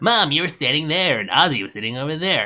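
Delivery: put-on half-hearted young man's voice. Recapping the part where Bobby recreates the crime scene with his mom, attempted Bobby voice. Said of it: "I can't do a Bobby voice".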